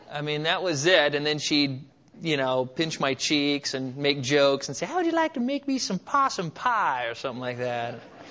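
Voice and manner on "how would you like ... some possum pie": high, strong put-on Southern lady accent. Recalling a neighbor lady from the south who made jokes, imitating a southern accent. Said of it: "she had this incredible Southern accent".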